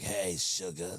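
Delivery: low, rough female voice. Retelling how a woman greeted him, Selma-like raspy voice. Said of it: "Sounded like Selma".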